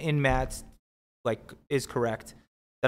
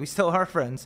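mock uneasy, anxious, nervous little tone; 3 semitones higher than usual. Recounting a poker hand, acting out an opponent's answer, imitating a nervous reply. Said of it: "he responded so nervously".

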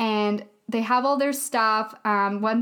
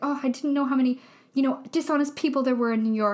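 mock sorrowful, let-down, sad and sorry-sounding voice; 3 semitones higher than usual. Retelling a movie scene in which Grace speaks: imitating a sad Grace. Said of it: "all really sad, and she's like".

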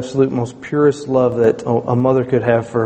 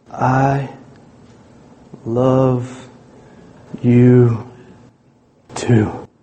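every word dragged out, very slow. Retelling how she answered his goodnight, said as slowly as possible. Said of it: "Just as slow as she could possibly say it".

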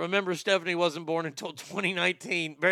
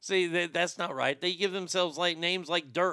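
normal talking voice

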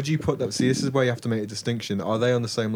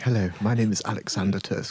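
put-on Oxford accent, not quite landed; 2 semitones lower than usual. Joking about how they would come across: Louis Theroux impression. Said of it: "I'm like Louis Theroux".

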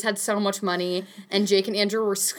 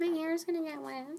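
teasing put-on voice, pitched up; 8 semitones higher, 10 dB quieter than usual. Imitating a friend who refuses to swim: Grace impression. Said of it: "That's my impression of you, Grace".

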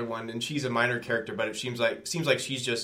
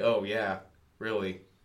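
mocking, disbelieving, dry sarcastic tone; 2 semitones lower than usual. Quoting a movie character's reply while discussing the film: retelling a sarcastic line. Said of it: "Ryan Phillippe's character says sarcastically".

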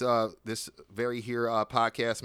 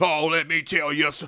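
put-on cartoon rooster voice, higher and louder; 5 semitones higher, 5 dB louder than usual. Imitating someone starting to answer a question: Foghorn Leghorn voice. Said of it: "you sound like Foghorn Leghorn starting up".

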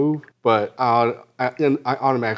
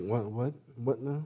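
hushed, very quiet, calm, totally unbothered; 12 dB quieter than usual. Retelling a man's answer to a shouting woman: imitating Gino's calm reply. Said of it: "He's just all fucking calm".

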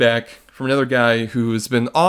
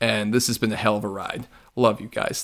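normal talking voice

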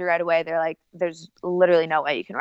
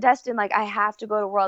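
mock pleading, tearful and begging, through tears; 4 semitones higher than usual. Retelling being pulled into the head doctor's office, reenacting crying and begging. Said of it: "and I'm like crying".

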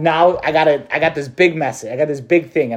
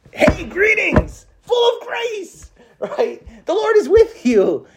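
very high, thrilled, excited, swooping sing-song voice. Picturing how the angel's big announcement went, excited Gabriel voice. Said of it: "Gabriel being just so excited".

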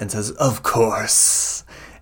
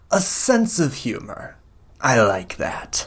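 cackling character voice. Game master voicing Araxes replying to a player's offer of help, cackling. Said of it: "Araxes cackles and goes".

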